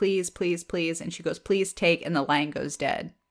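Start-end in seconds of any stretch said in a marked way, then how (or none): 0.0-1.0 mock-crying, tearful, pleading tone. Retelling a phone call where a woman on the line begs, imitating a crying plea. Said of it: "she's like crying and she just goes".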